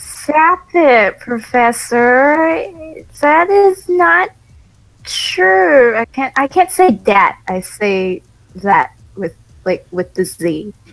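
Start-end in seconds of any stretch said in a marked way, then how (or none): 0.0-6.0 put-on high drawn-out Jersey accent. Rereading a line after being told to say it that way: Harley Quinn Jersey accent. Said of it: "like a Jersey accent".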